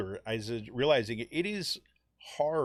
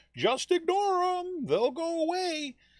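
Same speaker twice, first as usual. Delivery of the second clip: very high, slow mocking voice. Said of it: "there's still people that are saying".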